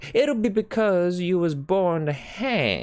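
very high, drawn-out, slow laughing delivery. The saloon keeper answers the kidnapper looking at his wounded hand, laughing. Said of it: "laughed the saloon keeper".

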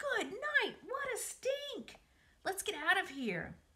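very high, shrill screaming. Narrator reading a boy fleeing the stink of a rotten egg, screaming. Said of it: "screamed Avery".

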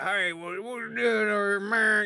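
rural Ohio twang.

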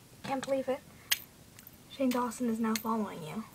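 ordinary talk, nothing marked

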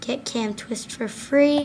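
ordinary delivery

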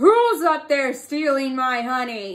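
loud, growling lion voice. Reading a story aloud, speaking as the lion, in a growling lion voice. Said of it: "he growled".

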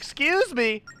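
very high shouted yell. Calling out to a game character who seems not to hear: yelling. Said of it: "You don't have to yell".

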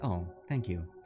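soft, sinking, calm voice. Showing how the voice sinks after a compliment: voice sinking in, calming. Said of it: "I feel my voice just kinda sink in".

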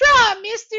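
little high-pitched voice. Quoting the Outlaw card's old voice line, in Outlaw's little high-pitched voice. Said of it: "in a little high pitched voice".

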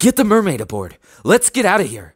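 very high, loud, shrill, urgent, swooping yell. Over crackling flames, one character shouts to the others. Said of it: "I heard Alexander shout".

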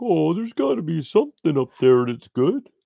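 squeaky, very high dog voice. Telling a story about her dog, pretending the dog is talking. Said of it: "me pretending it's her talking".

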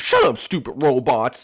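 nasty, cranky, mean, rude delivery. Insulting the robots while in a cranky mood: mean and rude. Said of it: "stop being so mean today".

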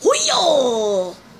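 high, loud, strained whooping cry.

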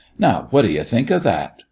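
ordinary delivery

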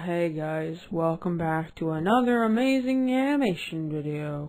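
far-off sounding voice, distant from the mic. Imitating an earlier recorded intro of the video: imitating own voice far from mic. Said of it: "That's literally my voice, but from far away".

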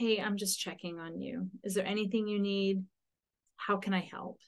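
very soft, gentle, easy voice. Showing how to check on someone who wants to be left alone, very gently. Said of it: "very gently, very quietly, very softly".

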